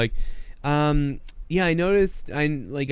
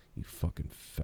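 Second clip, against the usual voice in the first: put-on coach voice muttered under breath, lower and quieter; 11 semitones lower, 17 dB quieter than usual. Imitating Belichick cursing at a player: Belichick muttering under his breath. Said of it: "under his breath, he's like".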